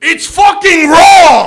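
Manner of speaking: very high, loud, hard put-on shouting voice. Impression of a celebrity chef at a Japanese restaurant: Gordon Ramsay voice. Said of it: "This is my impression of uh, celebrity chef uh, Gordon Ramsay at a Japanese restaurant".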